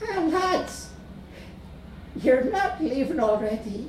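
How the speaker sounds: tiny, helpless, disappointed voice, very high. Narrator reads a woman's words as she watches the lads leave: small, helpless voice. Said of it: "her voice was small and helpless".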